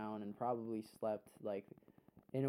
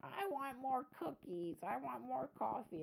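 put-on very high, panicked old woman voice; 14 semitones higher, 3 dB quieter than usual. Retelling what an old lady said at an outpatient place: imitating an old lady freaking out. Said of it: "this old lady, um, freaking out".

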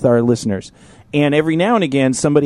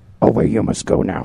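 put-on old puppet voice, pitched much lower; 6 semitones lower than usual. Yoda breaks the silence after he comes, in a Yoda voice. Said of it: "and then he's like".

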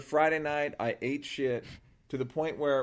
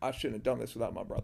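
put-on quiet voice, quieter; 2 semitones lower, 5 dB quieter than usual. Acting out a solo comic on stage: imitating someone going real quiet. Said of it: "people like get real quiet and go like".

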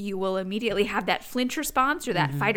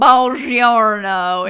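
put-on loud, raised voice, heavy thick Southern accent; 13 dB louder than usual. Recalling a film role as an Italian diplomat greeting: Brad Pitt strong Southern accent. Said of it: "in his really southern accent".

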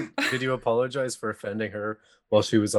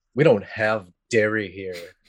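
put-on snooty, superior, slow, haughty tone; 3 dB louder than usual. Retelling how a coffee shop worker answered a milk request: imitating a haughty reply. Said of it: "this haughty thing".

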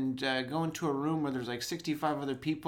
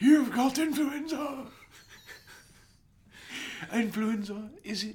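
put-on old-fashioned English character voice; 10 semitones higher than usual. Playing a doctor from England in 1850, in an 1850 English doctor voice. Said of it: "He's a doctor from England in, 1850".

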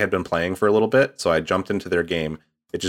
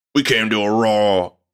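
put-on hint of a Southern accent; 3 semitones higher, 5 dB louder than usual. Imitating how the characters in a game talk, slight southern twang. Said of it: "just a tiny bit of Southern twang to their accent".

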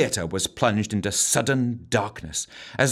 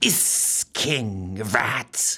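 hissing, breath pushed through teeth. Reading a story aloud, voicing a strange woman who answers, hissing. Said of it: "she hissed through blackened teeth".

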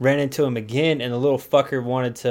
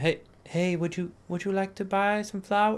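meek, sweet, humble voice, soft and high; 7 semitones higher, 7 dB quieter than usual. Retelling a little girl offering flowers for sale, imitating a humble, sweet girl. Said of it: "super humble and, and sweet, comes up and asks him".

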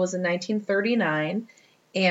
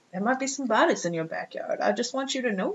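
put-on elderly-sounding old person voice; 4 semitones higher, 4 dB quieter than usual. Retelling what Jasper said, in Jasper's old person voice. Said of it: "It's like an old person voice".

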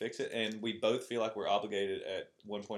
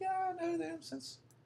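very high, badly faked put-on girly voice. A speaker contrasts guy and girl friendships, mimicking girls in a bad girl voice. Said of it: "that's a really bad girl voice".

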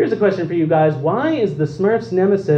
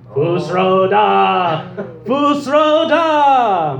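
put-on evil, sinister character voice; 3 semitones higher than usual. Quiz host repeats the answer for double damage; like the Temple of Doom evil priest. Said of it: "do it like the evil priest in Temple of Doom".

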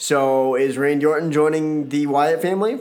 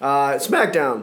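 voice cracking and breaking. Starting to name the show, voice cracking. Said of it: "Woo, voice crack".

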